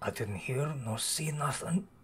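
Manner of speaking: barely audible, very quiet, slow murmur. Voicing a character answering the players: very quiet voice. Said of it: "very quietly".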